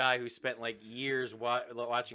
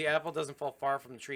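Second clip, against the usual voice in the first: usual speaking voice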